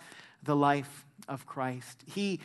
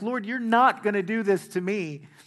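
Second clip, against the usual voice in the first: mock protesting shout; 4 semitones higher, 4 dB louder than usual. Retelling how Peter protested to Jesus: imitating someone shouting. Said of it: "shouts out".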